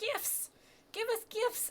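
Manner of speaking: tiny, very high, piping little voice. Telling a story, voicing a small voice in a high piping voice. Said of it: "High piping voice".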